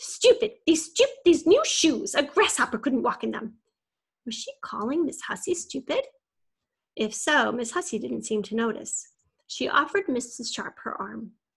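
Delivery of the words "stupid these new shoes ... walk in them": cross, irritated snap, loud and shrill. A woman helped up after stumbling at the curb snaps, irritated. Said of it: "Miss Sharp looked irritated".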